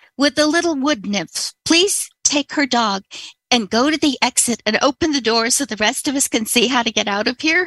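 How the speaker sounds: play-acted loud calling out, yelling. Retelling a classmate calling up to the professor: imitating Curtis yelling. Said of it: "he yells up".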